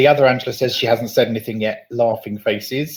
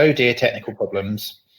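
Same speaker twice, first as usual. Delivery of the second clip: ordinary talk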